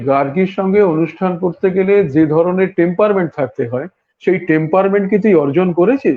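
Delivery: ordinary talk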